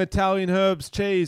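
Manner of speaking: ordinary talk, nothing marked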